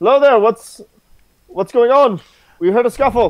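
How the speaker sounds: shouting loudly. Elf on a roof calling down to someone below, screaming down from a roof. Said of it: "this elf on a roof screaming at him".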